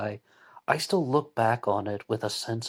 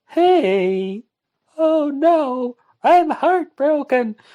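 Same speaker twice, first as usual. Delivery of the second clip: very high, very loud, very slow silly shrill voice; 11 dB louder than usual. Retelling own reaction to finding the beer brown: silly voice. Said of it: "talking in that silly voice".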